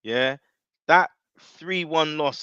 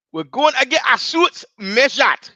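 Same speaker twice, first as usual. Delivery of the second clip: high, slow, loud bad Geordie accent. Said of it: "That was a terrible accent".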